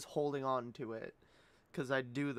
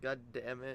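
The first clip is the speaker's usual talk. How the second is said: ordinary talk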